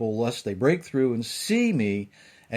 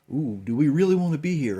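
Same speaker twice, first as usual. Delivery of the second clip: terrified, frightened tone; 2 semitones higher than usual. Retelling how the people reacted to the thunderous voice: imitating terrified people. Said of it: "that the people were terrified".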